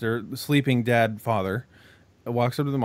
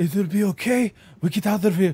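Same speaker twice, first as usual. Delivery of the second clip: light, pitched-up, put-on Russian accent; 8 semitones higher, 3 dB louder than usual. Retelling a movie girl comforting a little boy: put-on russian accent. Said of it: "kinda making her sound Russian".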